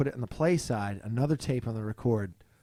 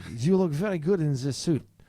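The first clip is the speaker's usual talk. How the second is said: clumsy, shoddy, bad put-on Eastern European accent; 4 semitones higher than usual. Retelling a tailor's words at a fitting: shitty impression of the tailor. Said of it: "this is a really shitty impression".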